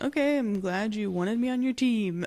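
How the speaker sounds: mock, falsely grateful, sarcastic tone. Retelling what Percy says about the team: retelling a sarcastic line. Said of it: "He said sarcastically".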